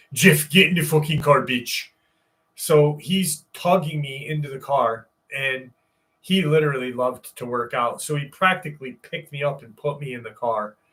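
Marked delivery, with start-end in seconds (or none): 0.2-1.9 fake Czechoslovakian accent like an action-movie hero. Retelling a friend's urgent order to get in the car: Terminator Czechoslovakian accent. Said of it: "in his greatest Terminator Czechoslovakian accent".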